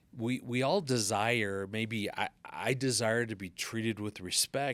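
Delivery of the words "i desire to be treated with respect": ordinary delivery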